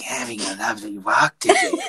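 crazed, unhinged, maniacal cat voice, wildly swooping. Joking about how pets would talk in videos, doing a maniacal cat voice. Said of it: "I imagine a cat is like pretty maniacal".

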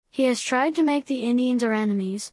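usual speaking voice

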